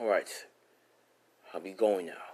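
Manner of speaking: plain reading voice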